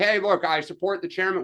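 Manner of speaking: ordinary delivery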